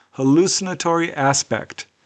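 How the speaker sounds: normal talking voice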